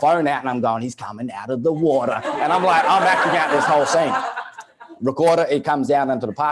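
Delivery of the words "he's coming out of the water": nature-documentary narrator voice, wildlife-film narration style. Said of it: "I'm now turned into, like, David Attenborough".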